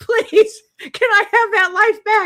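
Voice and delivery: put-on screaming. Retelling begging God for her old life back: retelling her own past screaming. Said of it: "I was screaming".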